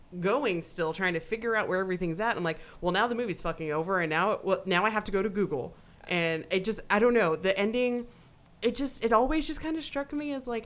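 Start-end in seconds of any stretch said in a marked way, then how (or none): none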